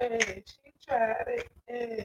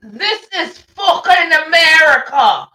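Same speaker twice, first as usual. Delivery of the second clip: put-on very loud, very slow yell in a British accent; 5 semitones higher, 17 dB louder than usual. Acting out what a woman is accused of screaming, screaming in a British accent. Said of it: "In a British accent".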